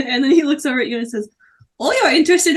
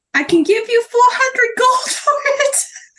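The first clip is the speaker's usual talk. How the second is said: tiny voice, much higher pitch; 10 semitones higher than usual. In a game, a buyer offering gold for a bow, tiny voice. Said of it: "Does he have that tiny voice?".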